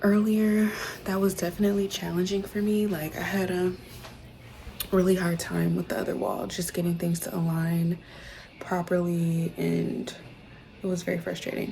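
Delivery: soft, hushed whispering. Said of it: "I'm whispering because Soul is asleep".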